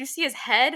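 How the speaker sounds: put-on high, acted freaked-out child voice, forced calm. Retelling a game scene after Ellie shoots someone: imitating Ellie freaking out. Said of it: "obviously freaking out that she did this".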